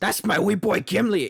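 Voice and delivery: Scottish dwarf voice.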